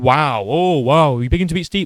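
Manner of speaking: mocking, put-on sarcastic tone. Retelling what the other speaker said earlier, imitating a sarcastic remark. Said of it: "and then you said".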